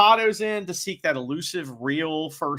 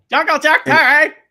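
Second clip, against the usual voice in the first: put-on yelling Canadian accent, higher and louder; 12 semitones higher, 11 dB louder than usual. Imitating Chris name-dropping a wrestler: South Park Canadian voice. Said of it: "Sounds like a Canadian from South Park".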